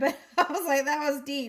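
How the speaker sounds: words broken up by giggles, laughing through. Reacting to a tarot reading just given: laughing while talking. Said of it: "I'm sorry I'm laughing".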